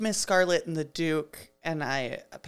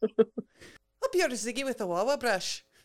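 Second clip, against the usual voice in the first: put-on slight Irish accent, a bit colourful, pitched up; 7 semitones higher than usual. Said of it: "You're Irish".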